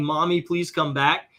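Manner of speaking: plain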